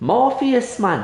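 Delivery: Isle of Man accent. Speaker imagines the line addressed to Morpheus redone in a Manx accent. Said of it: "a Manx accent".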